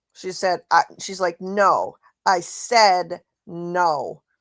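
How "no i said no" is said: acted rude, petulant, very slow and drawn out. Retelling how a woman refused someone: imitating a rude petulant tone. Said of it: "That's how she sounded talking to him".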